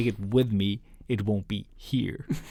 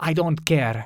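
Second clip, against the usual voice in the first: put-on Finnish accent, pitched up; 6 semitones higher, 3 dB louder than usual. Retelling a woman shoving boards into trash cans, in a finnish accent. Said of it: "like with a Finnish accent".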